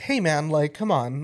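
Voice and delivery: plain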